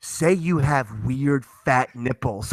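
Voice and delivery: mock drunken whispering. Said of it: "I actually had to whisper".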